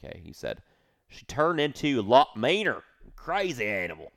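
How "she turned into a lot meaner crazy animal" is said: imitated Texas accent. Directly quoting what a man said, in an imitated Texas accent. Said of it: "I'm going to say it like him. ... that was a Texas accent".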